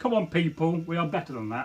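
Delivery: plain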